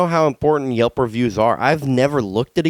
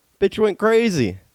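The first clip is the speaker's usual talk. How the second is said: ordinary talk, nothing marked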